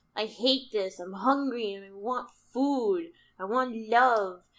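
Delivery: play-acted grouchy, grumpy, pained complaining tone. Picturing Lovestruck on a couch in pain, imitating Lovestruck being grumpy. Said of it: "grumpy because like they're in fucking pain".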